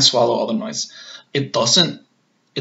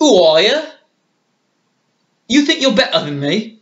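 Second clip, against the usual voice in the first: put-on, loud, high-pitched English accent; 8 semitones higher, 5 dB louder than usual. Showing what the English accent sounds like, the speaker does an English accent. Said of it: "what the English accent sounds like".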